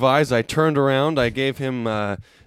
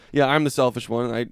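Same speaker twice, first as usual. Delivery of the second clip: plain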